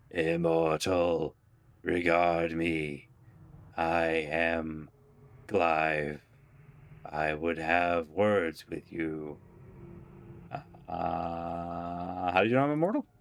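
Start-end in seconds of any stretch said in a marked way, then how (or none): 0.1-9.3 creaking voice like grinding stone. A stone face on the wall calls out to a passerby: Clive's creaking stone voice. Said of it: "calls out to you in a creaking voice that sounds like the shifting of boulders".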